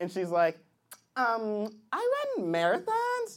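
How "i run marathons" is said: put-on young girl impersonation voice.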